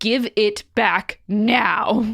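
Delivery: slow, very serious, dead serious tone. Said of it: "in a very serious tone".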